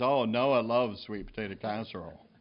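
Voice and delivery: put-on sarcastic tone. Retelling a remark his mom made, mimicking a sarcastic remark. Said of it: "His mom sarcastically said".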